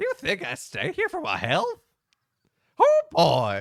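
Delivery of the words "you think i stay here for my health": very high, swooping, wild, crazy prospector voice. Reading a game character's reply aloud: bad crazy prospector voice. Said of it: "my best bad, crazy prospector voice".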